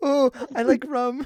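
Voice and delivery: put-on cutesy, high, childlike little-kid voice. Repeating back what the other speaker just said, imitating a kiddish voice. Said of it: "You said that like the most kiddish voice".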